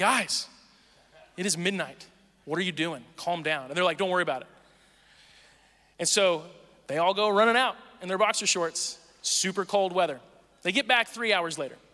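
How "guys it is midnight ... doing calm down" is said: sleepy, groggy, half-asleep put-on annoyance. An ra walking out to pounding on the doors, pretending to be half asleep. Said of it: "I pretend like I'm like half asleep".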